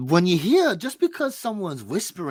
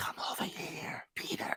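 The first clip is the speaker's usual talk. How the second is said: hushed whisper, barely audible. Acting out the locked-up girl calling the boy: whispering as the girl behind the wall. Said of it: "she whispers everything".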